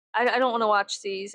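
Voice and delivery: plain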